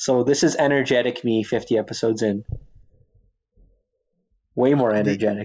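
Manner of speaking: dry, heavy sarcasm, tongue in cheek. Claiming to be more energetic after hearing an old boring clip: sarcastic. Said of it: "you sound very sarcastic when you say it".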